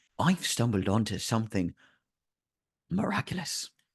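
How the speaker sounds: hushed conspiratorial voice. Voicing a character leaning across a table: lowered conspiratorial voice. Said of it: "lowers his voice conspiratorially and says".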